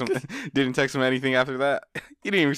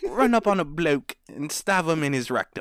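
overly perfect, put-on British accent; 3 semitones higher than usual. Imitating how he talked about knife crime: imitating a British accent. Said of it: "why your British, uh, accent a little too perfect".

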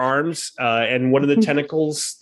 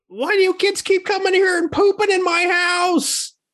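very high-pitched creature monster voice. Game master voicing a voice from inside the toilet, addressing the kids: toilet monster voice. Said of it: "a voice from inside the toilet saying".

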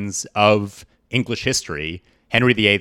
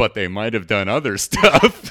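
mock suggestive, insinuating, innuendo-heavy delivery. Retelling a documentary interviewee's remark: imitating a suggestive tone. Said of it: "looks at the camera in this, like, very sort of very suggestive way".

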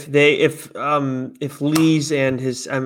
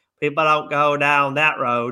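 put-on cartoon farmer voice. Asking which voice the other speaker meant, doing the South Park farmer voice. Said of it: "the farmer from South Park? Like".

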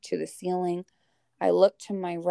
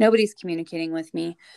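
usual speaking voice

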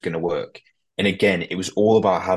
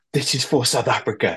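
shouting, pitched higher; 5 semitones higher than usual. Retelling what the captain shouted before a penalty kick: imitating someone shouting. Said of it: "he shouts at Pollard".

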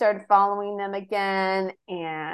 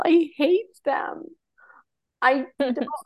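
mock crying, higher; 6 semitones higher than usual. Retelling a reality show scene where Heather cries: imitating Heather crying. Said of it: "crying and she's like".

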